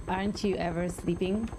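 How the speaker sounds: ordinary talk, nothing marked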